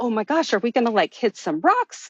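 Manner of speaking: mock-alarmed, panicked, freaking-out blurt. Recounting floating in the ocean while people screamed, retelling own freak-out. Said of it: "Freaking out".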